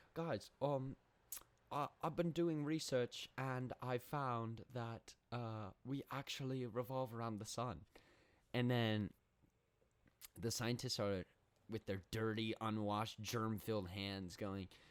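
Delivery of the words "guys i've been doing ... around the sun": put-on British accent, slower. Retelling a man addressing a board of scientists, in a british accent. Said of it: "is this a good British accent?".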